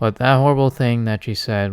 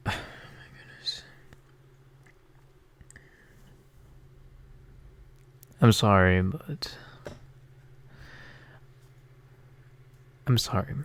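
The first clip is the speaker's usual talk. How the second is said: fighting tears, much quieter; 9 dB quieter than usual. Speaker talks about someone from two of their videos, holding back tears. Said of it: "I'm not trying to cry".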